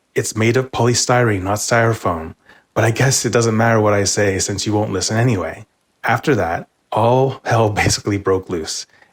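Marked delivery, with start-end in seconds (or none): none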